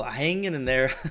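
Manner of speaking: said through a light chuckle, inflected. Showing how he answers small talk on the phone, chuckling while talking. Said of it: "I'll use this voice inflection and I'll and then I'll like just chuckle".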